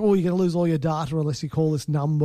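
ordinary delivery

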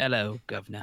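comic put-on British character voice. Riffing on the idea of characterful British yeast, in a comic British character voice. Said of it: "picturing a pile of yeast with a bowler hat".

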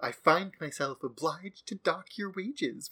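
gloating, smug, pleased-with-itself, self-satisfied tone. Retelling a scene from a show, quoting Sister Ursula: mock-smug Sister Ursula. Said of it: "with a little smirk".

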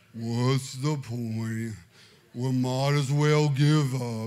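very low, sinking, hopeless doom and gloom. Recalling a night when everyone fell asleep in doom and gloom, mock-gloomy Eeyore voice. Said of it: "I was in full Eeyore mood".

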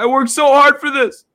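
acted crying, very high and loud tearful voice. Retelling how a fighter spoke at the mic after winning: imitating Brandon Moreno crying. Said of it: "He's just, like, crying".

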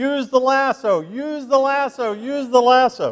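put-on very high, drawn-out kid's yell at top of lungs. Retelling how a four-year-old screamed from a pickup truck: retelling a boy's scream. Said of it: "he's just screaming at the top of his lungs".

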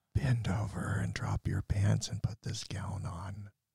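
soft, breathy, sensual whispered ASMR voice. Role-playing a doctor after being asked for ASMR: whispery soft ASMR voice. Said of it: "whispery, soft, sensual voices".

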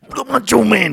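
gravelly wrestler promo voice. Imitating old wrestling promos from the nineteen eighties: Macho Man voice. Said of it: "He's like".

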